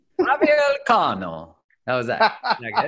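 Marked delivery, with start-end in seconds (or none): 0.2-1.6 fake Spanish accent, pitched way up. Podcast host introducing a guest to his listeners, in a put-on Spanish accent. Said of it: "I'm going to do this in my Spanish accent".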